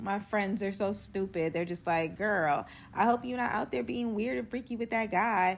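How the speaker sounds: ordinary delivery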